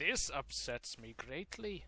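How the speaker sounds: put-on Scottish accent. Tabletop player who can't move their token, complaining in a Scottish accent. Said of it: "Why are you speaking in a Scottish accent?".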